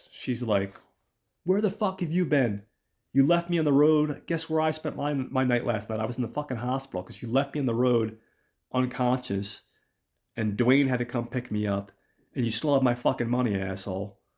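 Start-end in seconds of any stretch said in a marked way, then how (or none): 1.4-14.1 put-on, super angry, furious cursing rant. Retelling a film scene where a character calls, imitating Liza super pissed. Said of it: "she's super pissed".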